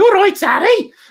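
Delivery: put-on very high, loud, strong Brummie accent. Recalling what a sister-in-law's dad used to say, in a strong brummie accent. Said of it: "he's real strong Brummy".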